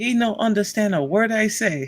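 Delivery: put-on Thai accent. Retelling a friend's mom's story in her accent: Mona's accent. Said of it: "the accent's killing you".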